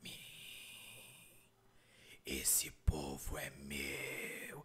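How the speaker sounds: very low, slow whisper, stretching out mim and meu. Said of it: "Esse mim foi esticando".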